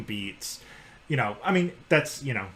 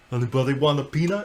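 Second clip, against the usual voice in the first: put-on gentle giant voice; 2 semitones higher than usual. Asked to keep going in character, quoting a movie line: Andre the Giant impression. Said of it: "the rest of this, uh, podcast to be an Andre the Giant".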